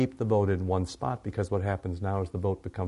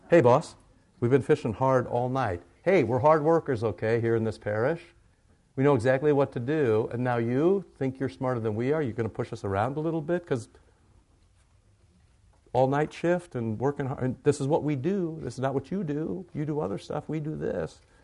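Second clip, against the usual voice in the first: mock sarcastic, pitched-up voice; 6 semitones higher, 3 dB louder than usual. Retelling Simon answering Jesus about fishing: acting out a sarcastic reply. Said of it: "it could be a bit sarcastic".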